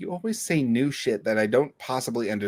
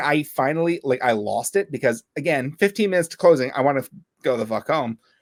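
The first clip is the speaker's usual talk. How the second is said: ordinary talk, nothing marked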